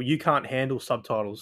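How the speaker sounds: normal talking voice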